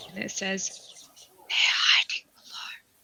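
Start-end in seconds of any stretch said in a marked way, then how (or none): 1.5-2.7 breathy, hushed whisper, voice dropped away. Voicing a whisper heard from under a doorway: whispering. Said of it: "you hear these whispers coming in".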